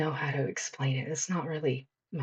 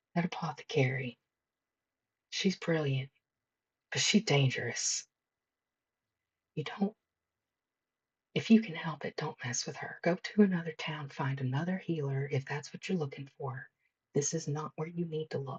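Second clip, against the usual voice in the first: serious, confiding, close, leaning-in voice. Voicing a townsperson who leans in to warn the player: quiet, leaning-in warning. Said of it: "one of 'em looks at you and says quietly".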